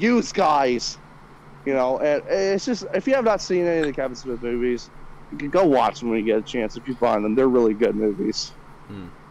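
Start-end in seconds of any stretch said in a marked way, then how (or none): 0.0-1.0 put-on stoner voice, Brooklyn accent. Describing Jay from the Kevin Smith movies, quotes him in a stereotypical Brooklyn accent. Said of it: "stereotypical Brooklyn".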